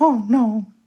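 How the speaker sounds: very high little cartoon mouse voice. Joking about a ban on cat ears: Mickey Mouse voice. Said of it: "best Mickey Mouse impression".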